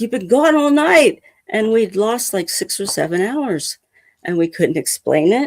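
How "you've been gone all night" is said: acted-out angry voice, pitched higher. Retelling what mom said after being gone all night, imitating an angry mom. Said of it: "she was so pissed off".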